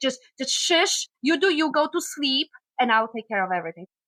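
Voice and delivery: put-on no-nonsense, tough, take-charge voice with Polish accent. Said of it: "with this voice".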